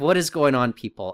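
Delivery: ordinary delivery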